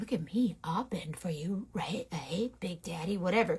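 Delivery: low, flirtatious floozy come-on voice. Voicing a very bendy brush called a floozy: flirty floozy brush. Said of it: "she's a floozy".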